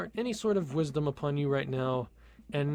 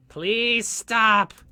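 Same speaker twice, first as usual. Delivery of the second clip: loud shouting; 4 semitones higher, 10 dB louder than usual. Begging the puns to stop: yelling. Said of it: "I'm sorry for that yell".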